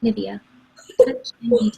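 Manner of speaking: sultry, creaky commercial voiceover. The speaker demonstrates a Nivea commercial read they recorded, in a sultry voice. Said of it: "Who's that sultry voice".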